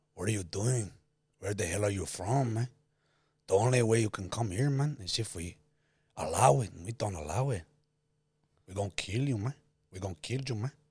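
put-on Argentinian gangster accent. Asked by the other speaker to do the Argentinian gangster, threatening someone: Argentinian gangster accent. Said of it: "do the Argentinian gangster".

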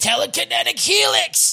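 put-on very high, shrill, ragged, rough anime-style scream. Retelling an anime scene where a character yells his power: imitating a screamed attack name. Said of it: "And he screams".

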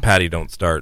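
plain

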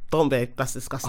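icy, cold, contemptuous, disgusted tone. Retelling a quote from Don: imitating Don, cold and disgusted. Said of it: "the way he said it was so cold".

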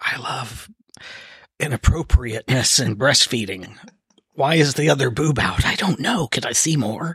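voiced stage half-whisper for effect. Half-whispering a joke message near the phone, as just suggested: pretend half-whisper. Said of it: "I'm gonna whisper".

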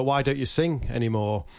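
ordinary talk, nothing marked

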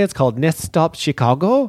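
put-on Norwegian accent. Naming a movie's title in Norway: Norwegian accent. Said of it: "Was that your Norwegian accent?".

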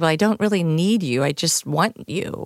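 ordinary talk, nothing marked

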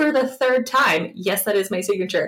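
put-on mocking, taunting tone. Retelling a witness answering a lawyer's repeated question: imitating a mocking witness. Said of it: "very much mocking the situation".

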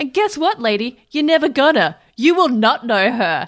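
high, loud yelling outburst. Retelling a scene where Kayla yells at a woman, imitating Kayla yelling. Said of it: "Kayla just starts yelling".

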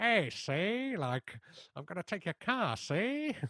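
put-on slow, old-movie mob-style hoodlum gangster voice. Imitating an actor's gangster-style line from a film scene: Humphrey Bogart gangster voice. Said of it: "his Ant Hill mob style voice, like the Humphrey Bogart".

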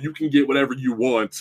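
ordinary talk, nothing marked

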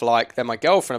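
normal talking voice

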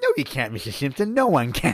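tiny put-on voice, high and swooping. Retelling a scene, quoting the man who hires Homer: imitating a little voice. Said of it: "the guy's little voice".

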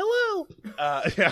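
very high voice. After a joke about the helium shortage, a high-pitched voice. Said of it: "high pitched voices bother him".

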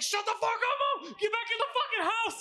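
play-acted, cursing yell pitched very high. Retelling how a friend yelled back at his mother: imitating him yelling. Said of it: "he's yelling".

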